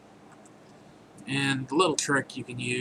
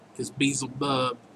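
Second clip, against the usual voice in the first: usual speaking voice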